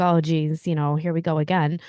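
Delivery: normal talking voice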